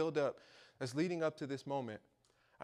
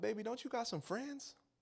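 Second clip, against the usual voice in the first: high, sweet put-on Louisiana grandma drawl; 8 semitones higher, 3 dB quieter than usual. Retelling their grandma's reply to their story: imitating sweet southern grandma. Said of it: "my grandma is a sweet southern lady from Louisiana".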